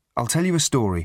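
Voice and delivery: ordinary delivery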